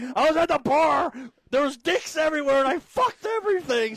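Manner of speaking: high, loud sarcastic going-off tirade. Retelling a line from a clip: imitating Tree ranting sarcastically. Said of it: "she's going off, she's like".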